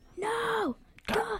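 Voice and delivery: acted, very high-pitched, furious, mad outburst. Acting out a famous Michael Scott moment: mock-angry Michael Scott no. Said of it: "When he's really mad when Toby comes back".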